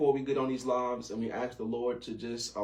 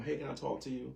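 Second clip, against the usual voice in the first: soft, gentle voice, not hard; 7 dB quieter than usual. Showing how to raise hurt feelings with a spouse: soft voice. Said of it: "with the soft voice".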